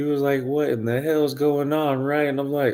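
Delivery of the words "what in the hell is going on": usual speaking voice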